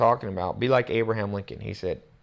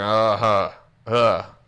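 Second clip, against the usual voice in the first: loud, cool, standoffish "uh-huh"; 5 dB louder than usual. Imitating people who hear good advice: imitating a standoffish tone. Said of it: "they're standoffish".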